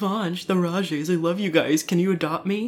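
mock fawning voice in a put-on tone.

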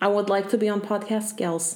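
put-on voice with a Russian accent. Podcast host gives the pet a voice, Mishka voice, Russian accent. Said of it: "Mishka's Russian. I have an accent for him".

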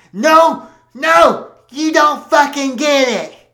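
put-on all-out screaming outburst, high and loud. Reading a story aloud where a character objects: screaming. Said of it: "Steve started screaming".

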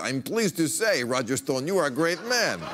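put-on Russian accent.

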